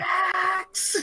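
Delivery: very quiet shouting, whisper-shout. In the game, a player's character calls out to max, with a quiet shout. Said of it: "Very quietly shouting?".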